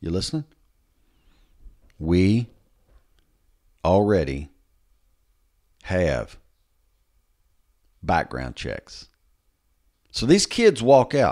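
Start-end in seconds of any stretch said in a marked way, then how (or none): 2.0-9.1 very slow, low, halting, word by word. Addressing someone who may be listening, the speaker says it slowly. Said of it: "let me say this slow".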